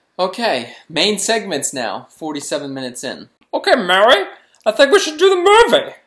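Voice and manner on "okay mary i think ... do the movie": put-on very loud, shrill, high old movie star voice. Starting the main segment in a put-on voice: Jimmy Stewart impression. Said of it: "Was that Mickey Mouse as Jimmy Stewart?".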